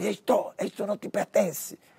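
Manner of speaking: high-pitched shout in portunhol. Recounting a man who put his hand on the speaker, retelling his shout. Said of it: "ele gritava".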